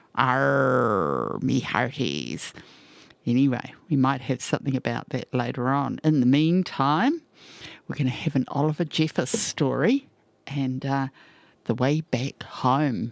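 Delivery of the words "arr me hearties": sing-song, swooping pirate voice with drawn-out "arr". Noting it was International Talk Like a Pirate Day, the host says, pirate voice. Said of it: "International Talk Like a Pirate Day".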